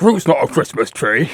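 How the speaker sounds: weird, irritated, annoyed northern man voice. Teasing a co-host about his annoyed audience voice: imitating an annoyed northern man. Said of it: "the annoyed audience voice is like weird, like Northern man".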